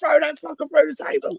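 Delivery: put-on high screaming like a little kid. Recounting watching a wrestling match, retelling how they screamed: retelling a childish scream. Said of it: "I was screaming like a 5-year-old".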